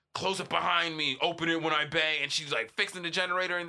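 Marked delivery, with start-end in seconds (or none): 0.1-2.1 gruff put-on mechanic voice. Retelling how a show's character acts at a generator: imitating a gruff mechanic. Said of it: "this gruff mechanic".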